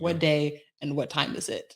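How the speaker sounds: ordinary delivery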